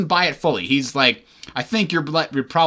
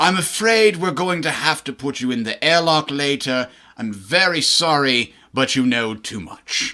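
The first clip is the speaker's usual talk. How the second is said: upper-crust Earth aristocrat accent. Showing how they voiced a character, in an earth aristocrat accent. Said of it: "I intoned him talking like this".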